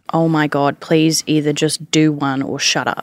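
ordinary delivery

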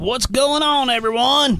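very high, eager, enthusiastic tone. Greeting everyone in the studio after being introduced: enthusiastic greeting. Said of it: "I love the enthusiasm".

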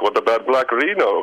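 put-on offhand Spanish accent. Telling how a bandmate made a suggestion during a jam, imitating Mariano's Spanish accent. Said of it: "with his Spanish accent".

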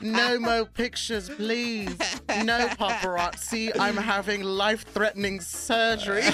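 put-on British accent. Retelling what she said before her surgery, in a British accent. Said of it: "she started speaking to me in a British accent".

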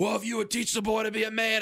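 high, screaming, angry retort. Retelling a phone fight between a dad and an uncle: imitating Uncle Jack screaming. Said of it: "my uncle was screaming back at him".

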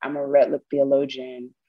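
ordinary talk

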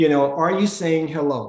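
ordinary delivery

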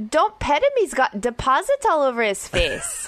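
put-on spoken with a Scottish accent. Retelling what a dog owner said on a walk: Scottish accent. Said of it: "in a Scottish accent".

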